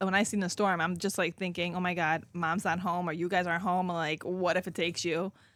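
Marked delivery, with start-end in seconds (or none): none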